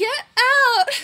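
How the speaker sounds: piercing scream, very high and very loud. Retelling telling someone to leave so she could shower: imitating own past yell. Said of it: "she yelled at me so she could shower".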